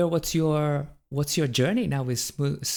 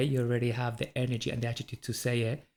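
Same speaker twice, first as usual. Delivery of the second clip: ordinary talk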